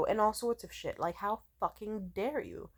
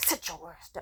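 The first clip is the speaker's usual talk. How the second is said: stern, no-nonsense scolding; 2 semitones lower, 5 dB quieter than usual.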